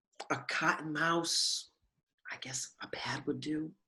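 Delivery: barely audible, hushed, very quiet stage whisper. Asking a friend in a bathroom for a tampon: whispering. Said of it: "Whispering like you did in your third grade play".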